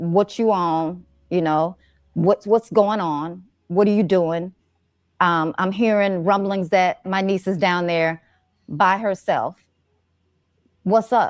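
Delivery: ordinary talk, nothing marked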